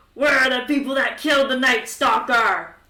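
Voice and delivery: loud, bellowing bugbear monster voice. Recounting a story, quoting the one stomping through the hallways: Bloody Knuckles bugbear voice. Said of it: "Sounds like a bugbear voice".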